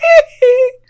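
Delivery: very high, loud falsetto hee hee squeal. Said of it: "it's just him going".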